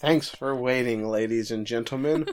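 ordinary talk

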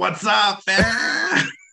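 loud, very high gamer bro voice. Retelling how an adult greets friends in a game: imitating a gamer greeting friends online. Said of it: "you get on and you're like".

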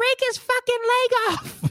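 put-on tiny, very high little child's voice. Retelling what a six-year-old behind them at a wrestling event said: tiny kid voice. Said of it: "this little tiny voice".

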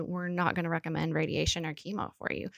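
normal talking voice

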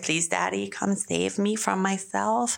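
small, childlike put-on little-girl voice. Retelling asking dad to come along to the bank: little girl voice. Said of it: "my favorite little girl voice".

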